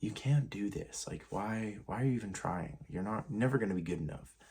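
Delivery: drained, listless, passive, very exhausted voice. Recalling the negative voice in their head: imitating a passive, exhausted voice. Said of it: "very exhausted voice".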